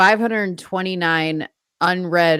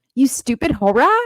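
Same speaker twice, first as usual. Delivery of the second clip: high, sassy, rude talking-dog voice; 6 semitones higher, 3 dB louder than usual. Owner retelling her pet dog's reply at breakfast, voicing Pickles the dog. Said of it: "she'll be like".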